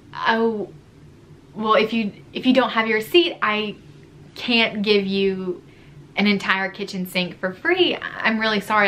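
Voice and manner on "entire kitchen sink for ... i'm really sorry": ordinary talk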